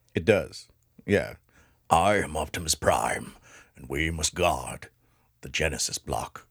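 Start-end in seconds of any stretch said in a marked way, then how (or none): 1.9-6.3 very low, deep, slow robot hero voice. Joking that Genesis block sounds like Transformers, doing an Optimus Prime voice. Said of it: "sounds like something from Transformers".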